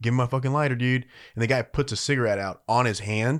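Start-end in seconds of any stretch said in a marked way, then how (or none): 0.0-1.0 mock-angry, acted-out voice, faster pace. Telling a story about a supervisor and a stranger, retelling an angry demand. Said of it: "Like he's like pissed".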